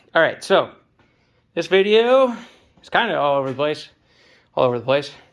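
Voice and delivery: out of breath, catching breath between words. Speaker records a video right after pushing something, out of breath. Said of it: "I'm out of breath".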